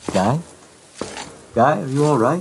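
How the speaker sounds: muffled-sounding voice. Voicing a character calling out to Guy from afar: muffled voice. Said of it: "you hear this muffled voice of Timothy".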